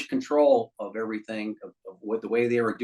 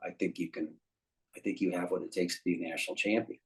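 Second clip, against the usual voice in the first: really soft, very quiet, far hushed voice; 4 semitones lower, 9 dB quieter than usual. Quoting what the man told him afterwards, in a soft voice. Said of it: "he's got really soft voice".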